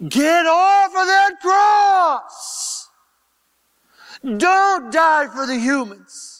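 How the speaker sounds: high, loud demonic screaming.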